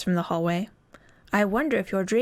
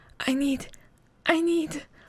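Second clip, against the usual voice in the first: feeble, weak, high, slow voice; 7 semitones higher than usual. Reading a story aloud, the narrator voices a caller on the phone: weak voice. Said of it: "a weak voice says".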